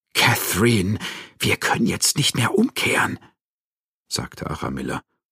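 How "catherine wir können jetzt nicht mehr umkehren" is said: high trembling voice, quivering, wavering, barely holding steady. Narrator reads Aramilla speaking to Catherine, trembling voice. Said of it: "obwohl ihre eigene Stimme zitterte".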